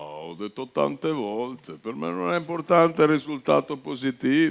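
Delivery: low, deep voice, spoken with chin tucked. Showing how tucking the chin in makes a deep Zeman voice. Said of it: "il mento in dentro viene una voce bassa".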